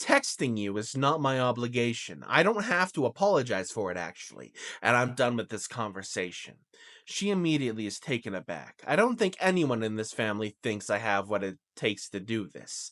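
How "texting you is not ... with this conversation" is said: ordinary talk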